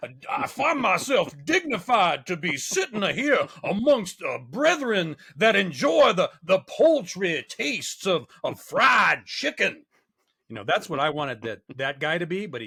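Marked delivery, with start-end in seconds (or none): 0.0-9.8 big, loud, slow, drawn-out cartoon character voice. Acting out the character he wished for: Foghorn Leghorn voice. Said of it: "Big foghorn leghorn".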